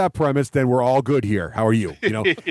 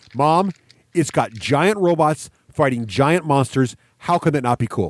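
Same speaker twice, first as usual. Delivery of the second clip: normal talking voice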